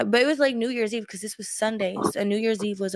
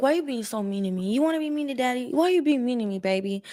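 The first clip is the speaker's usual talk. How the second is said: mock wheedling, sulky, whiny pleading; 3 semitones higher than usual. Retelling what the man said at the car: imitating a man's pleading whine. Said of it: "he was like".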